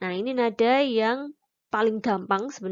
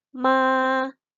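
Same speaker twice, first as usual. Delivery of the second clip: flat, level, steady first tone on ma; 3 semitones higher, 4 dB louder than usual. Teaching the first tone with an example syllable: level first tone on ma. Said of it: "nada pertama itu tulisannya cuman segaris saja, garis lurus".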